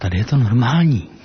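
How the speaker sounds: acted-out mild horror, rather horrified. Retelling a friend's first visit to the speaker's home: retelling a rather horrified remark. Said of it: "poměrně zděšeně".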